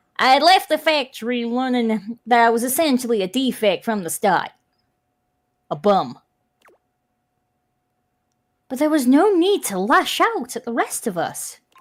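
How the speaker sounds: put-on Jersey accent, held steady throughout. Voicing a character in a game with a Jersey accent. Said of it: "the Jersey accent going".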